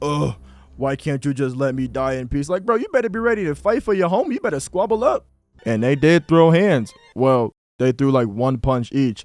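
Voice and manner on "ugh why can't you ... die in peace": put-on crying voice. Retelling how Reiner cried about wanting to die: imitating Reiner crying. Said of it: "This dude really sitting here crying about".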